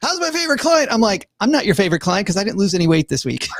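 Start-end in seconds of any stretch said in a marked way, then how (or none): 0.0-0.9 play-acted, very high, relentlessly upbeat surfer-style talk. Retelling their weekly calls, the speaker mimics Jessie's greeting: imitating over-the-top positivity. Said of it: "always like over the top positive".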